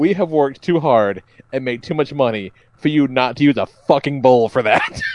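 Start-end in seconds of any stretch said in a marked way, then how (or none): none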